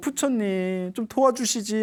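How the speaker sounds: crying out, tearful and sobbing, pleading. Retelling a letter-writer's prayer before the Buddha: imitating someone crying while praying. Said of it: "하고 막 울면서".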